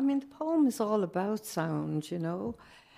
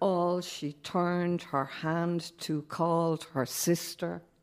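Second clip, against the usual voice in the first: slow, even iambic pentameter beat on every line. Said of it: "the line that carries is the iambic pentameter".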